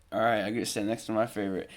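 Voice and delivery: ordinary talk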